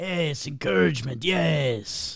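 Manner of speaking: character voice with the yes stretched long. Answering a request to impersonate Salvador: Salvador impersonation. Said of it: "do his best impersonation of Salvador".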